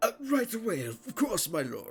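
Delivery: put-on drunk, tipsy noble voice. Voicing a drunk noble giving up his chair to a lord: drunk noble voice. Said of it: "extremely drunk, powdered-faced nobles just being like".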